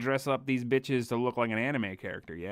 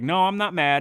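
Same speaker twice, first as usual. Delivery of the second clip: put-on huffy, sulky, louder and slower; 6 semitones higher, 9 dB louder than usual. Acting out someone sitting on the edge of the bed, mock huffy denial. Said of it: "all huffy puffy".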